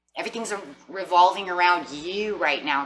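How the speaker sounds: plain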